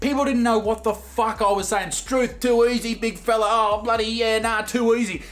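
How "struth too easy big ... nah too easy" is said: exaggerated, very broad, full bogan Australian accent. Recalling asking for an Uber lift, exaggerated broad Australian accent. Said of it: "I went so full bogan Aussie".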